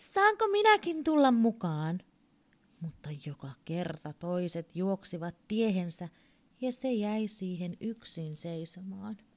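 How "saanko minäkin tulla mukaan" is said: very high, loud, swooping call. A little creature comes out of hiding and calls to the playing animals, calling out. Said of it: "se tuli esiin piilostaan ja huusi".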